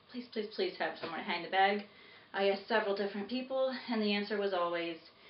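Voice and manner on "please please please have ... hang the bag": usual speaking voice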